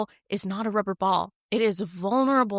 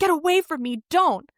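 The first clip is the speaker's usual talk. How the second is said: loud, raised, pitched-up shout; 8 semitones higher, 5 dB louder than usual. Retelling a scene where a character is shouting: imitating someone shouting. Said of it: "he's shouting".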